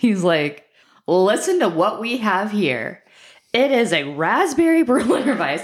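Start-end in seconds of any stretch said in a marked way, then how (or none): 1.1-5.6 slow, pitched-up, about-to-prove-you-wrong know-it-all tone. Retelling what Sean said about the beer: imitating Sean's prove-you-wrong voice. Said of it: "he gets the voice that he gets when he's like, "I'm about to prove you wrong."".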